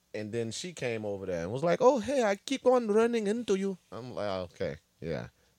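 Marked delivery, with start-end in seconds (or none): 1.9-3.8 put-on very high, off-target Polish accent. Retelling what she said on running into him at a waterfall, attempted Polish accent. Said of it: "That's not her accent".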